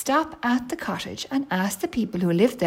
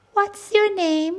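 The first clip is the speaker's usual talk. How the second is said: kindly, friendly, very high-pitched voice; 10 semitones higher, 4 dB louder than usual. Reading a story, a baby bear asks a girl her name in a friendly voice. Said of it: "he said in a friendly voice".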